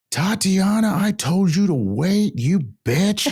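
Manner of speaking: top-of-the-lungs scream, shrill, very high, drawn out. Retelling a friend screaming for a lost companion while skipping lines: imitating someone screaming. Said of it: "screaming at the top of her lungs".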